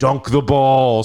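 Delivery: put-on beery, tipsy drunk yell. Retelling what a bunch of dads shouted at him, imitating beer-fueled dads yelling. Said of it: "a couple beers in yelling".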